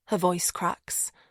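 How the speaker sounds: ordinary delivery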